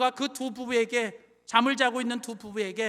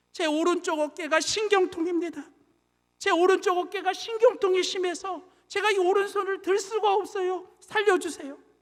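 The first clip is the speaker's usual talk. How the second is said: put-on sobbing, high and tearful pleading; 8 semitones higher than usual. Retelling a husband pleading with a robber: imitating a man crying. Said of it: "남편이 막 울면서 얘기를 하는 거예요".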